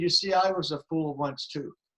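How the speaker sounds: plain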